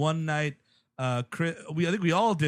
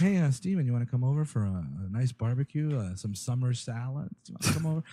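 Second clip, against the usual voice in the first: quiet, hushed, measured, soft-spoken voice; 4 semitones lower than usual. Speaker imitates the actor inviting Steven over, quiet soft-spoken Tom Noonan impression. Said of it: "really measured voice and really quiet, soft-spoken".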